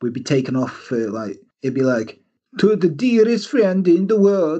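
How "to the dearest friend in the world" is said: clumsy, bad, high-pitched fake Norwegian accent. Showing listeners how a Norwegian accent from them would come out, bad Norwegian accent. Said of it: "If I did a Norwegian one".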